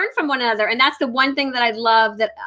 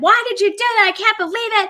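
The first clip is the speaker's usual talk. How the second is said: high-pitched scolding yell. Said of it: "you're yelling at you".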